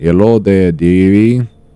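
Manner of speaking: put-on Russian old-lady accent. Trying out a voice for an old lady character, in a Russian lady accent. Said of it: "kind of a Russian lady accent I should have done".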